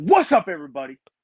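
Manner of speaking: confident, self-assured, loud, high, bold delivery. Showing the host how to open the show, bold, not timid greeting. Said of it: "You just gotta go in there and go".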